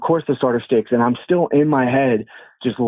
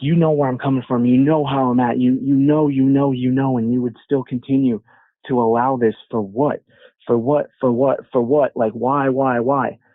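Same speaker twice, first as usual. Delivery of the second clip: acted furious muttering under breath. Speaker retelling what they muttered at God, in re-enacted furious muttering. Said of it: "I personally was furious".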